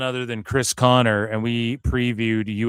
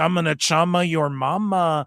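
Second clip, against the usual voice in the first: slow, put-on, tough street persona voice; 7 semitones higher than usual.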